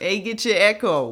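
mock street hawker shout. Acting out newspaper sellers on the street: imitating a newspaper seller shouting. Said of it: "people would be screaming Echo".

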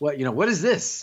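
put-on heavy German accent. Retelling a man's reaction when a moon car zooms into his office, heavy German accent. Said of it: "said with his heavy German accent".

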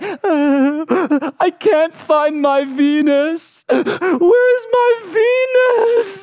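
put-on high, slow, tearful wail like crying child.

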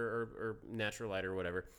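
ordinary talk

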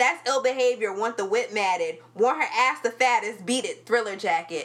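plain

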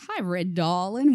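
put-on American Southern accent. Retelling how the main guy from a show greeted them, in a southern accent. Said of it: "in the southern accent".

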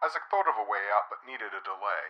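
ordinary delivery

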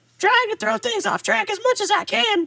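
very high, old-school cartoon character voice. A character called Hawkboy crashes the episode, in a Hanna-Barbera cartoon voice. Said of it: "You sound like a Hanna-Barbera cartoon".

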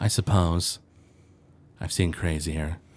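stoic voice. Telomere stares down and replies to the other character, stoic and emotionless. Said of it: "he's still stoic and emotionless".

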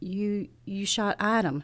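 stammered speech. Facing the creature in human form, narrator can only say this, stammered. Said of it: "I stammered".

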